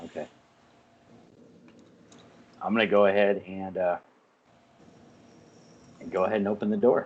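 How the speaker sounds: sad, sorrowful, downcast delivery. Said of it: "that was a sad voice".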